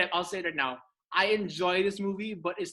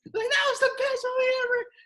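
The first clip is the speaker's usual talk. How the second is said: put-on scream, higher and louder; 5 dB louder than usual. Retelling leaving the theater after the movie: imitating own past screaming. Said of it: "I remember screaming at everyone".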